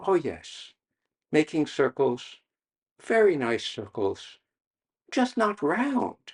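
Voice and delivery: sweet, gentle teacher voice.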